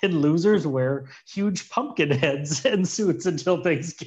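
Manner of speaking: words broken up by laughter throughout. Reading out a fan's odd match idea, laughing while talking. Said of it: "I couldn't say that without laughing".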